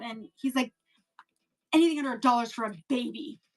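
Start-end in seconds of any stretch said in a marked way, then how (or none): 1.7-3.3 rude, dismissive, mean shopkeeper voice. Recounting a coin shop visit, imitating the coin shop guy. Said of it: "like in that voice".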